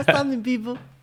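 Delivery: very high, loud call. Greeting people the way they did on TikTok: Mike Tyson impression. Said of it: "that impression of you... that Mike Tyson esque".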